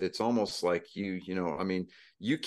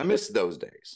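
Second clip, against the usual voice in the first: usual speaking voice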